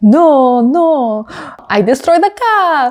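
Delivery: put-on slow, aggressive, heavy French accent. Retelling a crash radio message: aggressive French accent as Isaac. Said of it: "aggressively French accent".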